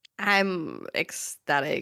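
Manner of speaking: low, flat, slightly bored voice. Asked how they felt about season two, answering in a slightly bored voice. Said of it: "almost slightly bored voice".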